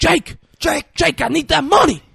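very high, ragged, rough repeated screaming yell. Retelling a movie scene, character screaming at someone walking away: imitating someone screaming. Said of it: "he's screaming".

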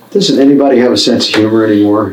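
normal talking voice

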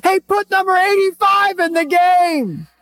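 put-on very high yell with game stretched long. Retelling how a parent stood up in the stands: imitating someone shouting. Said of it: "I found myself standing up and shouting".

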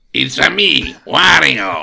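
loud, rough cartoon voice, dragged out very slow. Pretending a new guest has joined the chat: Wario voice. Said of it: "we've got someone trying to get into the chat here".

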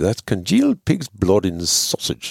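rough attempt at English accent, swooping pitch. Retelling a pub meal, quoting Jim's answer in an attempted English accent. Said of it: "is that a better accent?".

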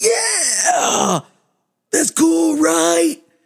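raspy, eerie, drawn-out voice. Recalling how a man sounded when excited, imitating a raspy, eerie voice. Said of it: "It was all like raspy and eerie".

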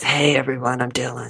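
put-on rough, gravelly voice. Podcast hosts reenacting an episode, speaker playing Dylan, Dylan gravel voice. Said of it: "brush up on my gravel voice".

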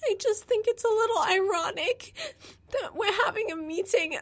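mock sobbing through the words, high crying voice. Retelling what a girl said in a meeting, imitating someone crying. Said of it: "She's crying and she's like".

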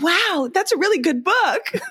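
very high, beautiful, bright American voice. Retelling what a stranger said on the staircase: imitating a bright American voice. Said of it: "beautiful, bright American voice say".

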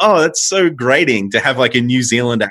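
normal talking voice

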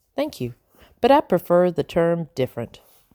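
plain

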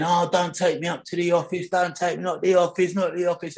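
repeated, high-pitched screaming. Retelling a scene of being taken to the office: imitating own past screaming. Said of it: "And I'm screaming".

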